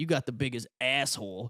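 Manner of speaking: rowdy hillbilly heckler voice. Retelling a heckle during a comedy set: imitating a hillbilly heckler. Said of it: "some fucking hillbilly guy was just like".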